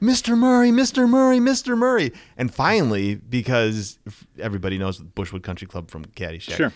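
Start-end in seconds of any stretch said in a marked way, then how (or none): 0.0-2.1 very high, loud, shrill, frantic calling. Retelling how a fan called out at a golf tee: imitating a woman yelling. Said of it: "she's yelling, she's yelling".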